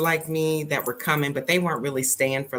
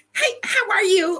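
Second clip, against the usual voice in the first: mock sickening annoying voice, higher and louder; 5 dB louder than usual. Retelling a young lady's greeting at a hostel: imitating a sickening annoying voice.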